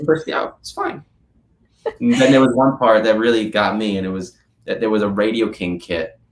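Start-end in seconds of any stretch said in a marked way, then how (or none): 0.0-1.0 high, offhand nonchalance. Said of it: "the nonchalantness of just like".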